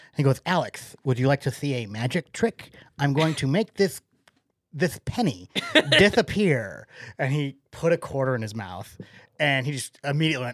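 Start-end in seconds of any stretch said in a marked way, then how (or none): 0.5-6.9 put-on lisp. Retelling what his little brother said to him as a kid: imitating his lisp. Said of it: "he had a lisp at the time".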